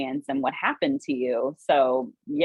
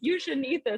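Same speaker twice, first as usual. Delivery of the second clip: put-on very high, squeaky little-old-lady voice; 11 semitones higher, 4 dB quieter than usual. Quoting a guy warning people with diabetes about a chocolate bar, in an old grandma voice. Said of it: "I'm making him sound like a grandma".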